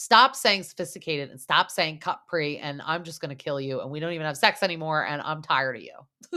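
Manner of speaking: exasperated, thoroughly annoyed, fed-up rant. Retelling a TV scene where the wife answers her husband: imitating an irritated wife. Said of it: "the wife is so irritated".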